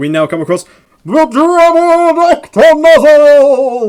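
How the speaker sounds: put-on very high, very slow, booming old monster-movie announcer. Announcing the next boss to a fellow player, in a 1920s monster movie impression. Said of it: "my best nineteen twenties monster movie impression".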